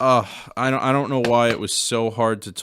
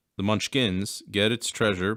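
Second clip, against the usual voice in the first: ordinary delivery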